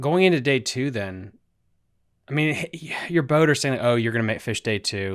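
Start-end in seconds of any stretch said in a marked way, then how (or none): none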